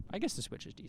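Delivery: whispered, barely audible, very quiet aside. Chatting with another speaker about game consoles, suddenly whispering. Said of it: "Why are we whispering now?".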